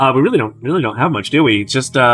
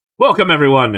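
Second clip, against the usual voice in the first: talking with mouth full of food; 2 semitones higher than usual. Welcoming everyone after a toast: talking with mouth full. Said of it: "I say with my mouth full".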